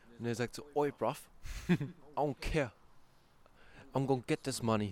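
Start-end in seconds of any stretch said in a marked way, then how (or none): 0.8-2.7 imitated London accent. Retelling what a contestant from london says on a show: imitating a london guy. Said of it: "der Typ ist aus London".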